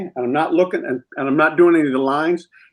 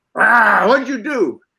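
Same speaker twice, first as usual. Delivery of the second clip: weary, slow growled line with raised pitch; 6 semitones higher than usual. Retelling the last take of a scene with a cat: retelling a growl. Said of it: "I growled".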